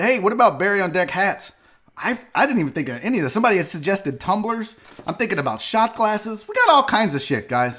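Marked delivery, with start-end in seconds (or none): none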